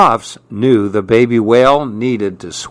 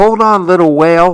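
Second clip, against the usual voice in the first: earnest, begging, pleading tone, pitched up; 7 semitones higher, 3 dB louder than usual. Narrator reading Maribel to the weakening baby whale: pleading. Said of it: "Maribel pleaded".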